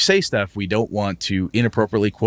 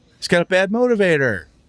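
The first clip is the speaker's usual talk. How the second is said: put-on sing-songy whiny voice, higher pitch; 10 semitones higher than usual. Quoting a line as an example: sing-songy whiny Luke Skywalker voice. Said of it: "in that sing-songy, whiny Luke Skywalker voice".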